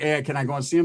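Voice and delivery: ordinary talk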